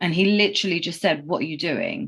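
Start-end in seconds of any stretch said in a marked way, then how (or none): 1.3-2.1 concerned, genuinely worried tone. Retelling what a boyfriend asked on coming home early: imitating a concerned voice. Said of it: "in a concerned voice".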